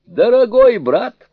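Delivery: very high, loud, through a burst of laughter. Sun Wukong answers Zhu Bajie, who asked the father to call his wife: laughing. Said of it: "рассмеялся Суню-кун".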